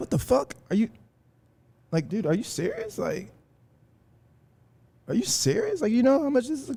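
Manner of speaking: stunned, high, swooping, can't-believe-it disbelief. Retelling his reaction when a stranger offered to pay: imitating stunned disbelief. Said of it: "I was really stunned".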